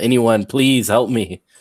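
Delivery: calling out, pleading, begging cry. Playing a character trapped in a stone box: crying out for help. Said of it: "crying for help".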